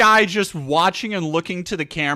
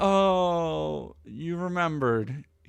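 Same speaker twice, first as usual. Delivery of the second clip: completely deflated, slow delivery. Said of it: "just completely deflated".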